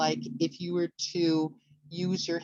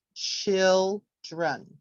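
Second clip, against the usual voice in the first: put-on children with stress on first syllable chil-; 3 dB louder than usual. Showing word stress on children in a lesson: stress first syllable of children. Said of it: "we said the stress was on the first syllable, so it would look like this".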